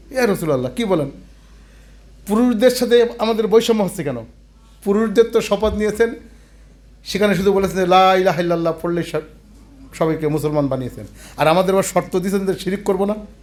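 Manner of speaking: plain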